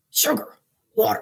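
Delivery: rough, raspy creature voice.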